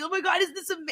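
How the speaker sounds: acted, delighted, awed, high, elated gushing voice. Retelling a reality show moment, imitating an elated person. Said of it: "he was so, like, elated".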